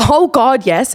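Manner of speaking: mock amused voice bubbling with laughter. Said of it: "she laughs and goes".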